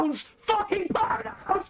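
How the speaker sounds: mock furious yelling. Acting mad on request after being told to get mad: acted angry shout. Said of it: "get mad right now".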